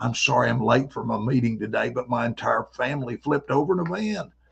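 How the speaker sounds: gravelly, creaking voice. Telling about an old buddy who sounded like this, imitating a buddy's voice. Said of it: "he sounded like this".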